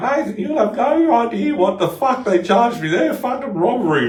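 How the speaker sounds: shrill, very high, very loud mum voice. Retelling what the speaker's mum said about the kebab shop, in her high-pitched voice. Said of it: "she's got a high pitched voice".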